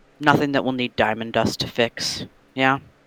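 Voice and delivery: whispering under breath. Speaking in character, quietly aside to another character: whispering under breath. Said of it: "under my breath, whisper to Meredith".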